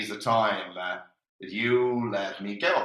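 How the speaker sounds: ordinary talk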